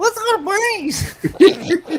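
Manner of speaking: weird mocking parroting, very high, loud, slow. Speaker retelling echoing the lady in front of him, mockingly repeating her line weirdly. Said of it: "repeat it in a weird way".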